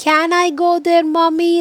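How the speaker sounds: high, loud, called-out shouting voice. Explaining the opposite of whispered to learners, shouting. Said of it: "Like shouting".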